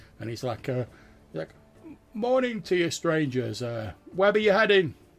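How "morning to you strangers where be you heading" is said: very loud, high call carrying over distance. Voicing a fisherman greeting strangers from a distance: shouting from a distance. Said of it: "shout out".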